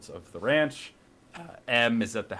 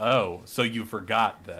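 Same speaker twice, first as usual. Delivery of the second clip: put-on passive-aggressive tone. Retelling a movie character's line to her brother, mock passive-aggressive. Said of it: "she had the nerve to be like".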